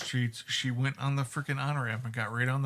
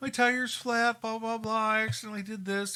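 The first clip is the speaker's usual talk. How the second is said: play-acted weepy, sobbing, high, tearful crying voice; 9 semitones higher than usual. Retelling a phone call from an emotional person, imitating someone crying. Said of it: "She's like crying".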